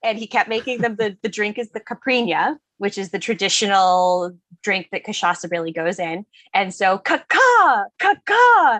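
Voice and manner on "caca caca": put-on high, loud, drunken screaming. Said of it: "they kept screaming".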